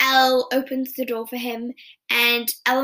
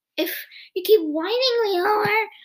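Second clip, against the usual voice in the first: high, pitched-up, mocking parrot voice; 9 semitones higher than usual. Speaker retells a scene where Luke mimics Mike, in a mocking imitation of Mike. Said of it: "Basically mimicking him".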